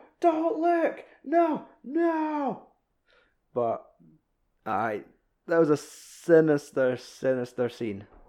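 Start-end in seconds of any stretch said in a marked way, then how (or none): 0.2-2.7 very high, very slow, drawn-out screaming yell. Retelling a horror scene, screaming at the tv: imitating screaming at the tv. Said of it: "screaming at the T V in your living room going".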